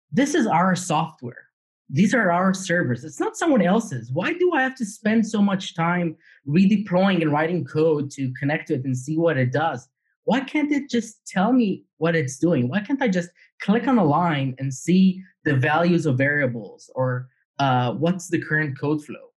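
ordinary talk

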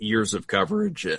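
tearful voice breaking and cracking mid-phrase. Speaker, insisting they won't cry again, speaks with voice cracking. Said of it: "as the voice crack".

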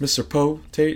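country English accent. Trying out character voices, attempting Mr. Poe Tate but sounding like Samwise. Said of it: "I sounded like Samwise from Lord of the Rings".

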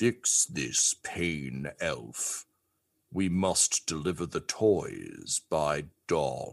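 low, slow character voice. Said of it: "he just looks down and says".

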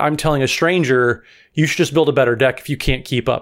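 usual speaking voice

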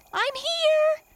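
joyful, shrill cry, very high and very loud. The little turtle finds his sleeping brothers and sisters, joyful cry. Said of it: "he cried joyfully".

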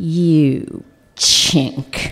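put-on gruff tough-guy voice. Retelling the woman's insult after a big inhale: Clint Eastwood voice. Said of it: "Clint Eastwood in drag".

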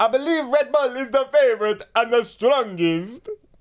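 high-pitched put-on Italian accent. Reading out a team boss's quote in an Italian accent, as asked. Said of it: "Do an Italian accent so I can copy".

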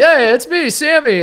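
very high, slow, stretched-out, easygoing friendly tone. Retelling how Sammy Sosa greeted everyone: imitating Sammy Sosa. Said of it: "he's like".

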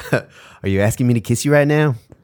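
attempted New Zealand accent. Repeating a man's line about a kiss when asked, in an attempted new zealand accent. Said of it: "do one more time".

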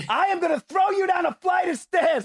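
very high, shrill, raging angry scream. Describing how their mother used to be: imitating mom screaming. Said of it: "She'd be screaming".

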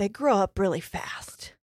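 put-on trembling voice. Retelling what a man said before walking away, imitating a shaking voice. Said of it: "And then his voice was shaking".

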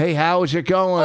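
ordinary delivery

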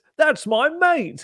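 mock protective voice, very high and slow.

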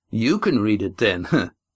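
scornful, contemptuous, disdainful tone. Reading Adramin's reply to Astraea in a story, scornful. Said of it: "said Adramin scornfully".

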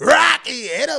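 very loud, full yelling. Imitating the other speaker's loud reading of a chat message, imitating someone yelling. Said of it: "Why you yelling like that, bro?".

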